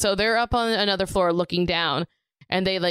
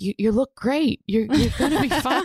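put-on whisper, pitched higher; 6 semitones higher than usual. Retelling a movie scene where a cop talks to his injured friend: imitating a whisper.

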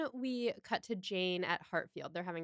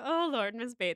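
mock delivery spoken through the teeth; 5 semitones higher, 4 dB louder than usual. Recapping an Emma adaptation scene, imitating Kate Beckinsale through teeth. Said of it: "like through her teeth".

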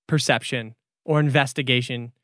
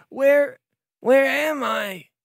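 put-on very high, slow child's voice, coughed out; 10 semitones higher than usual. Voicing rescued kids as webbing is pulled off: coughing kids. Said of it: "are coughing".

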